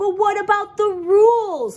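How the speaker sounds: whiny, complaining, high, loud whine. Narrating Phil Jr. and Pete protesting to Uncle Phil: whined. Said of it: "whined Phil Jr".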